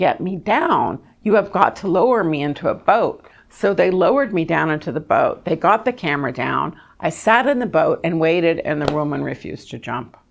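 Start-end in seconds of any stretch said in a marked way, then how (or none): 0.0-3.3 play-acted pleading cry, kept contained and restrained. Retelling being stuck hanging upside down over a river: retelling a scream. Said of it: "finally I started screaming, saying".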